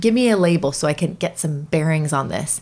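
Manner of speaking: normal talking voice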